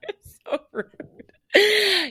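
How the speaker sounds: high-pitched, slow, laughing whine.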